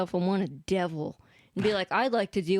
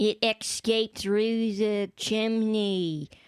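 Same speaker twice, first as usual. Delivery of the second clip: put-on New Jersey accent. Speaker imitates a woman in a video they watched, in a new jersey accent. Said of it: "that's a Jersey accent".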